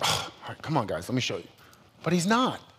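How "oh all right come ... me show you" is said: soft, whispered, exasperated mock grumble. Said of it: "he's, like, frustrated".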